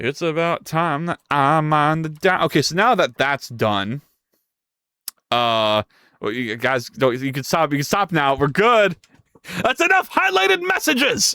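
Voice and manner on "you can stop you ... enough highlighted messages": fake angry outburst, higher pitch. Telling chat to stop sending highlighted messages: mock losing temper, meme outburst. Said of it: "I lost my cool there for a second".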